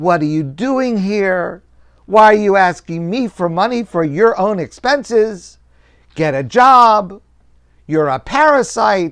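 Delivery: high scolding yell, "job" stretched out. In a story, a wealthy man at his door yells at a young man: retelling a man yelling. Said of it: "he starts yelling at him".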